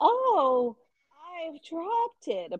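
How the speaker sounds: very high, slow, terribly acted delivery. Retelling a scene where a girl drops a diamond: imitating terribly acted line. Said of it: "was terrible acting".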